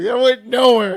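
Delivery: loud, high-pitched laughing disbelief.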